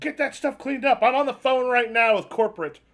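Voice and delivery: angry, high-pitched yelling. Voicing a boss heard yelling at a worker: yelling boss. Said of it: "Then you hear someone yelling".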